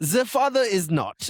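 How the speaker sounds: put-on German accent. Joking about beer in a put-on german accent. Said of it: "When I were German".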